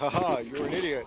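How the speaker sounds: mock taunting, gloating voice. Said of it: "he goes".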